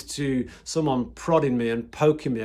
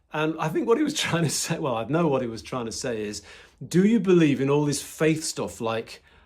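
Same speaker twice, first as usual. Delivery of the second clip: ordinary talk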